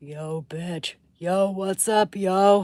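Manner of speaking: loud, slow, drawn-out, belted put-on voice. Showing off the impressions he can do: Jesse Pinkman voice. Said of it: "I can do Jesse Pinkman".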